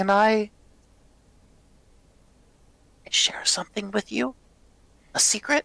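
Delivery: shy, bashful, very high, timid little voice. A narrator voices a character who looks at the listeners, speaking shyly. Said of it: "looks at you all shyly and says".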